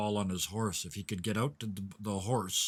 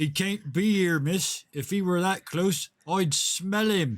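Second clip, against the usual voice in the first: exaggerated booming projection, overly loud and very high; 10 semitones higher, 7 dB louder than usual. Bill turns and speaks into the forest in an overly loud voice. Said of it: "in an overly loud voice".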